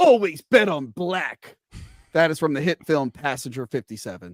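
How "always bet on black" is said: slow, drawn-out, dramatic movie-style delivery. Making a betting pick, the speaker quotes the film line as a Wesley Snipes impression. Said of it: "I will do it like in the movie".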